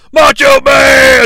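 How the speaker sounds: loud, high hollered yell. Retelling a wrestling scene, calling down a hallway: imitating Hulk Hogan yelling. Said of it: "he yells".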